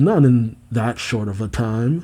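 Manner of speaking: ordinary delivery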